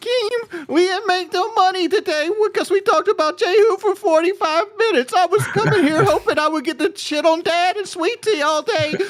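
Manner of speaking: very high-pitched fake crying. Showing the others what fake crying sounds like: fake crying. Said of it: "This is just me pretending to cry".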